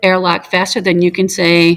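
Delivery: ordinary delivery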